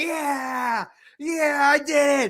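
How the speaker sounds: mock cheering, very high, slow and drawn out. Retelling a celebration at a birthday party: retelling excited cheering. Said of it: "I'm jumping up and down. I'm like".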